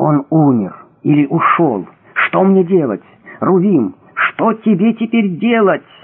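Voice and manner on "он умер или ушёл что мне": ordinary delivery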